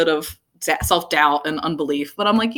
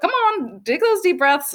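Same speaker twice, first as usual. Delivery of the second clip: very high, sassy mom voice; 11 semitones higher than usual. Speaker describing an inner voice heard while alone with the trees, sassy lady voice. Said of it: "It's such a sassy lady".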